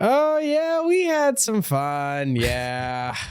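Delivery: very high, sing-song, swooping put-on co-host voice. Answering a question about Nashville as Jeff: Jeff voice. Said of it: "I'll do his voice".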